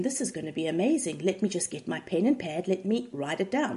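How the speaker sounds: usual speaking voice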